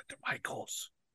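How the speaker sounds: very quiet, hushed whisper under the breath. Telling where a birthday gift was bought, whispered. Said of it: "I'll whisper it".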